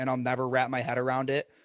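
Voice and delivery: ordinary delivery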